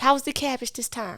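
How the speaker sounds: really sweet, soft mom voice.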